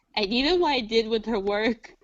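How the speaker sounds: plain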